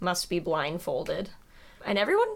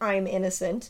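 normal talking voice

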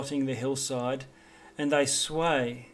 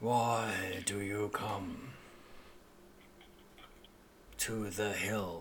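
very quiet, very low, hushed grumbling voice; 6 semitones lower, 10 dB quieter than usual. The willow trees beside the climbing path speak to the travellers, very low grumbling voice. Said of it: "they speak in a very low grumbling voice".

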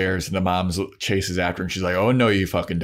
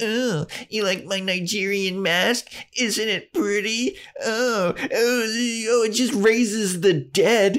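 very high, very slow taunting, mocking drawl; 13 semitones higher than usual. Retelling a scene where a character talks to himself: retelling Giles mocking Joyce. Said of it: "he's mocking Joyce".

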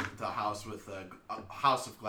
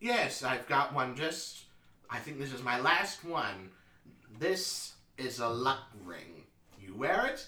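put-on elderly shopkeeper voice with polite sales patter; 3 semitones higher than usual. A game master voices the old man behind the counter to the players: old man shopkeeper voice. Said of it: "The old man behind the counter says, / The old man behind the counter says, / The old man behind the counter says, / we sell all sorts of magic items of all sorts of types".

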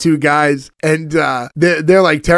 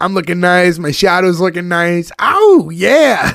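big, animated, drawn-out delivery. Retelling a scene where the Cat talks to himself: animated Cat impression. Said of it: "He's very animated".

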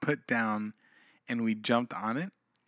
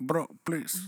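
mock Spanish accent, higher pitched; 5 semitones higher than usual. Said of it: "a Spanish accent".

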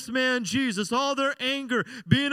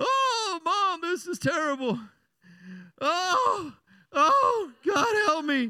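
very slow, drawn-out, swooping fake crying; 4 semitones higher than usual. Retelling a childhood spanking, imitating own fake crying. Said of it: "and I fake cried".

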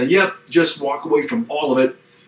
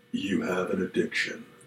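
put-on on-air radio announcer-style delivery; 7 semitones lower, 11 dB quieter than usual. Giving the last reason for marriage counseling in a put-on radio voice. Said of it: "I'm going to say this with my radio voice".

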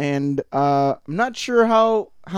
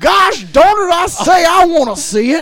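shrill, very loud, high full cartoon holler; 13 semitones higher, 10 dB louder than usual. Describing how a voice sounds, then doing the Foghorn Leghorn and Yosemite Sam voice. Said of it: "a mixture between Foghorn Leghorn and Yosemite Sam".

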